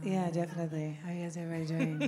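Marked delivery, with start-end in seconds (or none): 1.0-2.1 mock sultry voice, lower and quieter. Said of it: "I feel like I have to talk at this tone".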